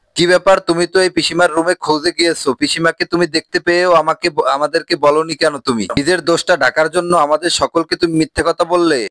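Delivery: ordinary talk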